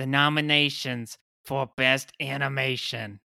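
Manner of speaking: robotic text-to-speech voice. Reading out award nominations as a bit, in a failed Roz impression. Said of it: "You sounded more like Rocket voiceover from TikTok".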